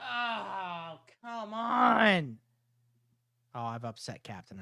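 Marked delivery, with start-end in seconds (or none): 0.0-2.4 high, exasperated, frustrated shout with "oh" stretched out. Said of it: "I've yelled too loud".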